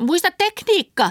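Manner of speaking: very high, loud, full-throated yell. During a karate fight with robbers, one fighter shouts to her companion: shouting. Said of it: "huusi Helga Haliselle".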